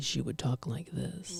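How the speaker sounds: deep, hushed voice. Imitating a woman who lowered her voice to be taken seriously, lowered voice. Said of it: "she lowered her voice for everything".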